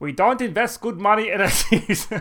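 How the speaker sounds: put-on German commandant voice. Reading out a quoted statement on air: German commandant voice. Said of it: "What does he sound like, a German commandant?".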